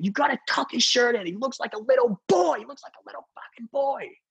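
imitated screaming man. Telling how a man screamed at a very big director, retelling someone screaming. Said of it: "And he's screaming".

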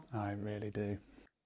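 cold, quiet whisper. Answering another speaker's question from the corner: cold whisper. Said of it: "a really cold whisper in the corner".

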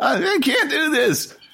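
high, slow, whiny voice. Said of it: "now I know why I sound so fucking whiny".

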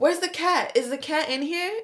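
put-on yelling, light and high in pitch. Retelling a younger sister suddenly asking about the cat: imitating someone yelling. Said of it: "Emma starts yelling".

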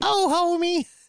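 very high-pitched, growling cartoon housewife voice. Answering a remark about sounding like Marge Simpson: Marge Simpson voice. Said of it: "You sound like Marge Simpson".

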